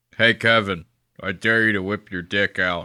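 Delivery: put-on flat, toneless delivery. Retelling a dare said to Kevin across a room: imitating Big Jay Oakerson with no tone. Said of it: "he mundanely looks over and goes".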